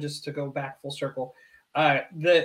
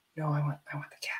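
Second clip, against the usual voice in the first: hushed, little whispered voice; 9 dB quieter than usual. Retelling a daughter's answer about picking the cat: imitating a whispered reply. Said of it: "She whispers that to me".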